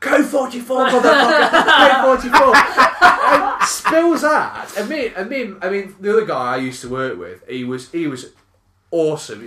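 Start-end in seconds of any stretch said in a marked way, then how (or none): 0.0-2.6 loud, high-pitched yelling outburst. Retelling how a coworker skidded and started shouting: imitating someone shouting. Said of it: "he starts shouting".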